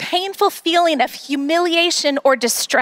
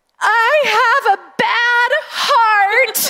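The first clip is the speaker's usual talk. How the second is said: put-on sobbing child voice, higher pitched; 8 semitones higher than usual. Retelling a daughter's words after discipline: imitating Avery sobbing. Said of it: "And she's sobbing".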